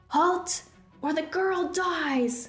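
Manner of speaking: ringing, high shout, last word held long. The smaller giant, holding Evelyn in his grasp, warns the group; shouting.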